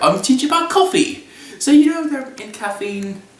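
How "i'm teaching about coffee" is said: put-on British accent, higher pitch. Retelling a vision where the spirit of wakefulness, James Hoffmann, speaks: James Hoffmann British voice. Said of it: "He comes to me in his British voice".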